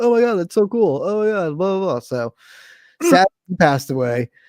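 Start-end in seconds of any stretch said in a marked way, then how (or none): 0.0-2.0 acted-out high, excited, thrilled gushing. Act out a cool guy's reaction to hearing about a concert, imitating someone so excited. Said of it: "he was so excited".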